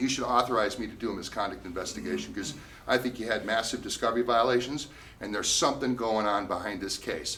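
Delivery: normal talking voice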